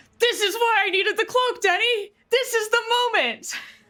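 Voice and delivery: loud, excited yelling shout. Answering a missed attack roll at the table: excited yelling. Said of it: "Why are you yelling at me?".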